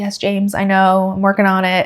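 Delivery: exasperated reply tone. Retelling a reply heard through a door: imitating an exasperated reply. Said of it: "Kakko just sounded so exasperated".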